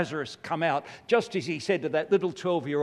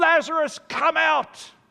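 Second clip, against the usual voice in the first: loud, high, booming, commanding cry; 13 semitones higher, 5 dB louder than usual. Retelling Jesus calling Lazarus out before the sisters, retelling a loud mega-voice call. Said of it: "He said loudly with a mega voice".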